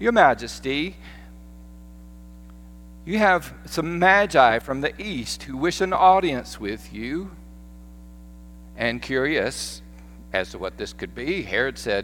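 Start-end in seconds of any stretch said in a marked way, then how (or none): 0.0-7.3 fake British accent over a Southern U.S. accent. Retelling the story, a servant announces visitors to the king: southerner faking british accent. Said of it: "a southerner trying to fake British accent".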